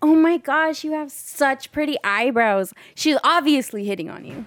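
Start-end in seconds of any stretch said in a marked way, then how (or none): 0.0-2.7 high, gushing, effusive voice. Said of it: "we only talk like that".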